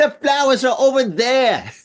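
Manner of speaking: horrible put-on Australian accent, very high-pitched. Hearing Australian tourists walk past, imitating them in a horrible Australian accent. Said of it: "That's my horrible, horrible Australian accent".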